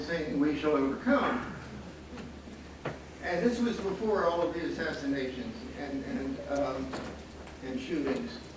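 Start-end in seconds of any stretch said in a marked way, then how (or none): none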